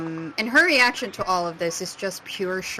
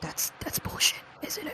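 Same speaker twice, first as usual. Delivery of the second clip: soft, hushed, barely voiced whisper; 8 semitones higher, 8 dB quieter than usual. A character looks at a companion and asks her: whispering. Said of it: "she kind of whispers".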